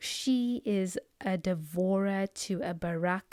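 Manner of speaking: very slow, deliberate, drawn-out delivery, word by word. Speaker warning listeners they will say this so slowly, said very slowly. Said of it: "I'm going to say this so slowly".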